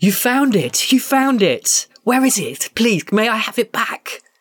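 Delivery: squealing, very high-pitched and gleeful. Narrator voicing Ngumba as she runs forward to the listener: Ngumba squealing with joy. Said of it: "with a squeal of joy".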